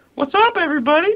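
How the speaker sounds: goofy, silly put-on voice pitched way up high. Greeting listeners at the start of an episode: put-on silly higher voice. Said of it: "why did we all just go into a silly higher voice?".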